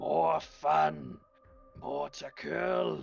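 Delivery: high, rough, ragged growling ogre voice. Storyteller voicing an ogre that growls at the listener, growling ogre voice. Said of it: "he growls at you and he's like".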